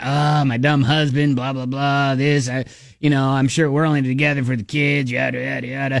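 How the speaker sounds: low, put-on smoker's voice. Acting out a woman venting to Ryan about her husband: put-on smoker's voice. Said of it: "I don't know why I gave her a smoker's voice".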